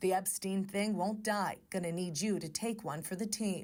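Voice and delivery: ordinary talk, nothing marked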